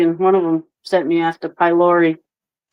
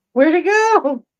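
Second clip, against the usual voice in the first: very high, crestfallen, bummed-out little raccoon voice; 12 semitones higher than usual. Retelling a video of a raccoon losing its cotton candy: imitating a bummed-out raccoon. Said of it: "He is so bummed out".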